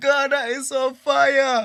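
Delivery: very high, very loud scream. Host retells a caller screaming through the phone, imitating a man screaming. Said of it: "He's still screaming through the phone".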